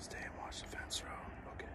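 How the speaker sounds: hushed, soft, unvoiced whisper.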